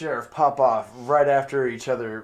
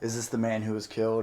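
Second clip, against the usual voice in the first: usual speaking voice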